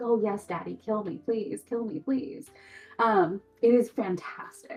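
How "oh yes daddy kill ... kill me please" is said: play-acted, eager, flirtatious, teasing pleading tone. Acting out a book character begging the mercenary: mock flirtatious pleading. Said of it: "this wonderful, flirtatious, like, teasing relationship".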